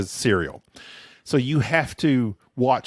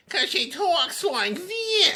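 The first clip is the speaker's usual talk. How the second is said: very high, slow voice pinched through the nose. Mocking the Nanny lead's voice as annoying: super nasal Fran voice. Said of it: "All super nasally".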